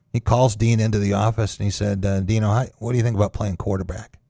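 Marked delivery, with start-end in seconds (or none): none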